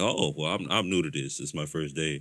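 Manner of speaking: play-acted dry sarcasm with friendly, polite edge. Retelling what a guy waiting in line said: imitating a sarcastic remark. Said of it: "he was kinda just being sarcastic".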